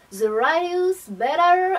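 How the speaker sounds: clumsy, bad put-on English accent. Presenting this month's body butter, saying its English name in a bad English accent. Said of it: "mon accent anglais qui n'est absolument pas bien bon".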